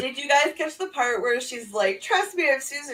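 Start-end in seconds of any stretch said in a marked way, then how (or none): 2.0-3.0 mock furious, high-pitched yelling outburst. Retelling a match moment when the wrestler yells at another wrestler: imitating Susan yelling. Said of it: "She's, like, yelling at Tenille".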